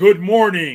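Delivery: sudden huge, loud, booming voice. Walking her out to the car, the speaker retells a voice greeting them: big booming voice. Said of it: "this big booming voice says".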